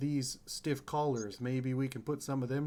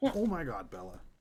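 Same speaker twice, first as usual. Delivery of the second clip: low, fed-up, exasperated fatherly tone; 4 semitones lower than usual. Speaker reacting to someone nearby, in an exasperated dad tone. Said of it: "That was the most like exasperated dad tone".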